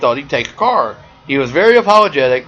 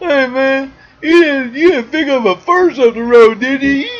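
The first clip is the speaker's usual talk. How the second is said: put-on very high, very slow, sloshed drunken drawl; 12 semitones higher than usual. Retell a guy walking out the door to question you, imitating a drunk man. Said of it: "he's drunk by the way".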